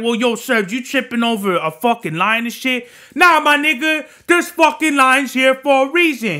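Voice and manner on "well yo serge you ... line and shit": ordinary talk, nothing marked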